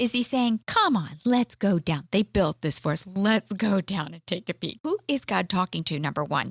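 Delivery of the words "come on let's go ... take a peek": acted, facetious, faux-casual, sarcastic tone. Acting out an imagined line while reading a Bible story: imitating God being sarcastic. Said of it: "is he being sarcastic here?".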